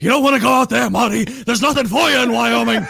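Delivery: put-on high, loud, rough, creaky, raspy character voice. Joking after hearing a warning retold, doing a Doc Brown voice. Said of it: "You sound like the Doc from Back to the Future".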